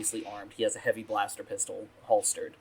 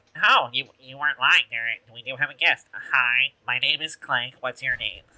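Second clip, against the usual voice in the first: put-on battle droid voice; 3 semitones higher, 4 dB louder than usual. Voicing the droid greeting the arriving group: Clank voice. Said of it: "and he turns to, to greet you all".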